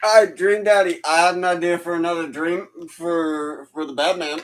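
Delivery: put-on drunken slurred speech, for drawn out. A character tells a deity she has another dream idea, drunk, slurring. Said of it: "You're slurring".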